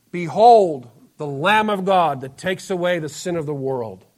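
very loud, booming bellow at full volume. Act out the man turning around in an apparently empty room, bellowing in a Spurgeon-like voice. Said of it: "he bellowed with all of his Spurgeon-like voice".

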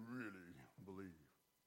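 put-on voice dropped an octave, "really believe" low. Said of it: "they'll drop the voice down an octave or two".

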